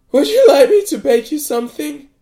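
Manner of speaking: very high, very loud squeaky voice. [name] speaks to Renato after running a hand down his cuff; squeaking. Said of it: "she squeaked".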